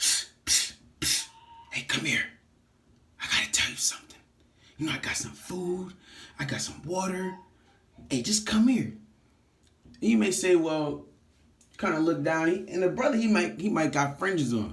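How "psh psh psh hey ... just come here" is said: hushed, breathy whisper. Acting out a stranger luring someone closer: imitating someone whispering. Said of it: "you may have somebody kinda whisper".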